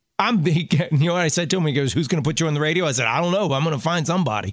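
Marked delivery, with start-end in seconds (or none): none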